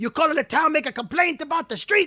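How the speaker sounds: mock yelling and screaming, pitched high. Retelling a man yelling through the door about a street complaint, retelling a scream in Luigi voice. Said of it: "he's screaming and yelling through the door".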